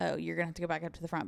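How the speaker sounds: put-on attitude, snippy and rude. Retelling what the server told them: imitating a remark said with attitude. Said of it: "but he said it with attitude".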